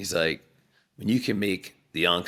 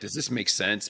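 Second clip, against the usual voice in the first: level pitch ending on "sense", no lift. Mimicking people asking a question without curiosity, flat ending on sense. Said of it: "But there's no rising inflection".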